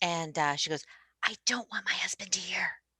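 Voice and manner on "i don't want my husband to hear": put-on whisper, quieter. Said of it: "why are you wh-, whispering?".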